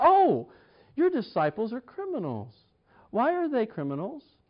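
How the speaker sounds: put-on smug, arrogant, sing-song tone. Retelling a Gospel scene, the speaker acts out accusers going to Jesus, mimicking a smug tone. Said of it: "that smug tone in their voice".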